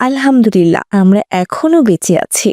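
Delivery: ordinary delivery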